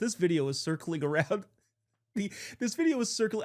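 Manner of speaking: talking through laughter. Starting to describe a video circling online, laughing while talking. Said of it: "I'm laughing at my own jokes".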